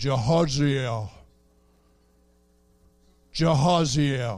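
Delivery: voice dropped to the deepest low bass. Speaker telling listeners about the Bible, acting out God calling a name in a deep bass voice. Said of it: "with this Deep bass voice spoke and said".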